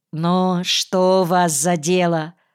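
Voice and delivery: ordinary talk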